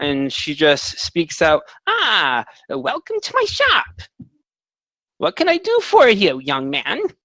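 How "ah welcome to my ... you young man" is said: put-on very high-pitched, swooping elderly old lady voice. Voicing an old shopkeeper lady greeting the party: old lady voice. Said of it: "there's this old lady who greets you".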